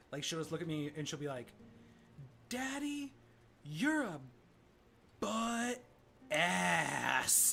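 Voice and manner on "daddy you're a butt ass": very slow, halting, pitched up, ass drawn out. A dad acting out what his daughter says to him, said really slow. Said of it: "she says it really slow".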